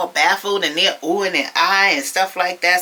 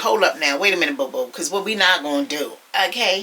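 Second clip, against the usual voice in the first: plain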